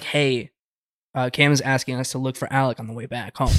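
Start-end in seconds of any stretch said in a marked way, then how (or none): none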